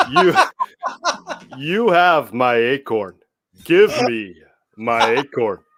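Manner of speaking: slow, drawn-out cartoon voice with swooping, swinging pitch. Doing an impression of a favorite animated movie character: Kronk voice. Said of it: "really good impression of him".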